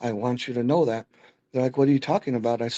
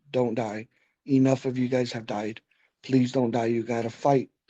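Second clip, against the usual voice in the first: mock crying, tearful pleading tone. Recalling a nurse holding their hand and pleading, imitating someone crying.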